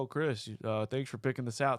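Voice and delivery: mock sarcastic tone. Retelling how gift recipients react on opening it: imitating sarcastic thanks.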